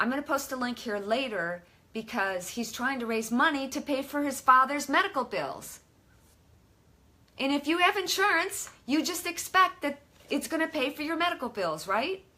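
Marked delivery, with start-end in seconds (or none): 7.4-12.2 exasperated and frustrated, getting worked up, pitched up. Talking about insurance not paying medical bills, frustrated. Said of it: "I'm getting all frustrated".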